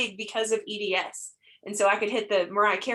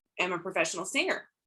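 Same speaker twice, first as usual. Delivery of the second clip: normal talking voice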